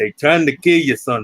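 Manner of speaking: put-on thick, laid-on North Indian accent. Retelling what a man said when you walked in with a tray, use a heavy northern indian accent. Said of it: "heavy Northern Indian accent".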